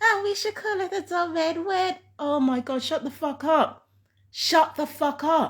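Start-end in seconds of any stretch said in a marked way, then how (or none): 0.0-2.0 put-on high, fast little-kid chatter. Complaining about the two people upstairs, imitating a child's voice. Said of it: "It sounds like a child's voice saying".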